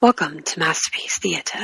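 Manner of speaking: near-whispered, breathy, put-on stately TV host voice. Remembering a Saturday night PBS show host: Masterpiece Theater host voice. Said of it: "he would sit in his chair and be like".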